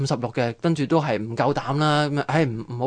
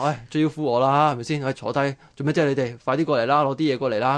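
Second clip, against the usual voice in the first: ordinary delivery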